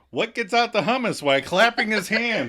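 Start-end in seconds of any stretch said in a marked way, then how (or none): 0.1-1.2 higher-pitched, mild mock yell. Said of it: "he starts yelling".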